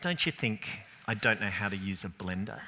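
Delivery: low, quiet, condescending, superior, disdainful. Retelling their reply to a warning about the blender, mock-disdainful retort. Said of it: "I look at her with disdain and say".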